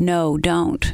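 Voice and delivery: normal talking voice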